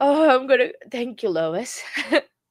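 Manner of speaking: high, tearful crying voice. Speaking to the audience and thanking a supporter, crying. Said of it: "because I'm crying".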